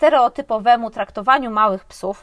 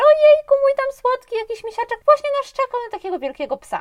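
laughing while talking, higher pitch; 13 semitones higher than usual. Retelling what a dog owner said on the phone: imitating someone laughing while talking. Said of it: "się zaśmiała przez telefon".

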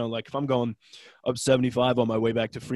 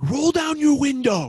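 play-acted, pitched-way-up, furious angry shout; 14 semitones higher, 4 dB louder than usual. Retelling own road rage at other drivers: imitating own road rage yelling. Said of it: "I'm the guy that's like".

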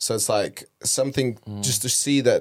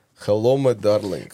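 creepy, sinister put-on Russian accent. Offering to play a creepy Russian character, in a creepy Russian accent. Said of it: "you definitely could use a creepy Russian character".

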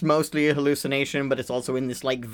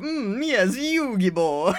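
very slow, swooping evil anime villain voice; 8 semitones higher than usual. Describing an evil anime character, imitating the evil cartoon character's voice. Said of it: "his voice is incredible".

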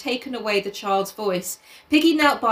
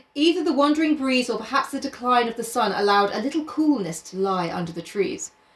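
ordinary delivery

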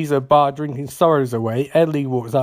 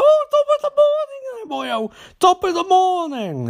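very high-pitched, sing-song put-on stage-Irish accent. Retelling a story, voicing a very Irish guy at the hotel: imitating an Irish accent. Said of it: "there's this very Irish guy".

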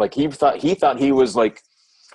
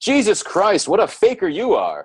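mock loud, swooping, embarrassing-dad voice; 8 semitones higher than usual. Retelling what an old man said to them, in a loud embarrassing-dad voice. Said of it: "in this loud, dad embarrassing voice".

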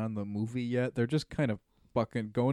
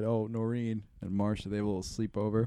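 ordinary delivery

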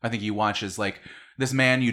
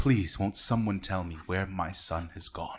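tearful, welling-up, pleading voice; 4 dB quieter than usual. Voicing a father on screen asking where his son went: welling up while pleading. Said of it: "this man is welling up".

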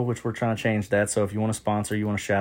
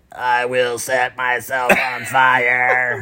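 loud, drawn-out mechanical voice-box voice; 3 semitones higher, 5 dB louder than usual. Retelling what someone with a throat voice box said, in a voice-box voice. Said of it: "With the little voice box".

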